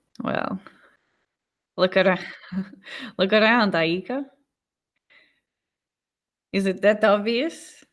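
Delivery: sarcastic delivery. Reading a woman's reply in a story, sarcastic. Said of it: "She says sarcastically".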